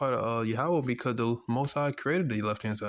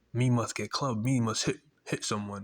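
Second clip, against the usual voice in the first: put-on caveman voice. Describing Esau as a barbarian, speaking as him in a mock caveman voice. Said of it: "he is a caveman".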